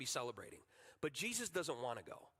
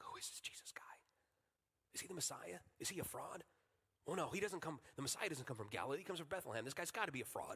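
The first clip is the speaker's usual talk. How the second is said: hushed, murmured whisper; 5 dB quieter than usual. Retelling what festival crowds said about Jesus: imitating people whispering. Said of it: "he's hearing people in the booths whispering".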